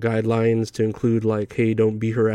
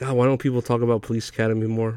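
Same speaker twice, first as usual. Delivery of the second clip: plain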